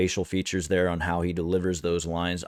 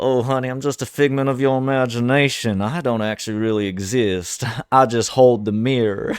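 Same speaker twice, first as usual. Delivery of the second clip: high, loud, fruity, devilish voice with southern accent; 6 semitones higher, 6 dB louder than usual. Showing what the character tells people: Reverend Cain's southern devilish voice. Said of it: "He kinda talks like he's got this southern, almost fruity, devilish type of tongue".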